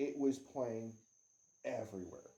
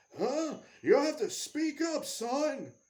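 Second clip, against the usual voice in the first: put-on high-pitched, loud elderly man voice; 8 dB louder than usual. Retelling the old store owner answering a customer: imitating a very old man. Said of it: "It was an old woman, old man, like eighty".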